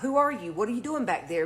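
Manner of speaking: plain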